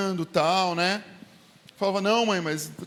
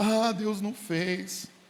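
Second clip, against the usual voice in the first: mock weepy, whimpering, slow whining cry; 3 dB quieter than usual. Imitating a believer who cries when God does not grant a wish: imitating a believer crying. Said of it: "o crente fica chorando".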